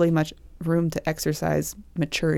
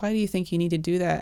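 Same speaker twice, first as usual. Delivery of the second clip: mock-defensive tone, faster; 4 dB quieter than usual. Retelling a talk with Mom about faith, imitating a defensive tone. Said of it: "she was like getting defensive".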